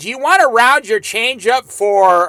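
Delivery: ordinary talk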